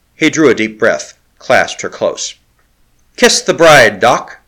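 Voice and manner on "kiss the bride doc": raised, exclaiming cry. The O'Keefe calls to Doc as Larry clasps Lakla close, crying out. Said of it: "cried the O'Keefe".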